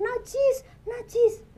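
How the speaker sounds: high, loud shouted cry.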